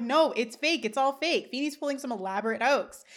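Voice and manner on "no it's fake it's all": plain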